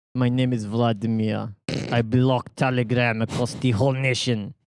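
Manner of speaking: clumsy, unconvincing, fake Russian accent. Talking about Telegram being blocked in Russia, in a bad put-on Russian accent. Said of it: "It's not a great Russian accent".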